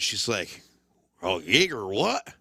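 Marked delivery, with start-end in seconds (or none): 1.2-2.2 put-on southern twang, much lower pitch. Retelling a bar story, quoting the woman serving drinks, southern twang imitation. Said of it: "that southern twangy voice".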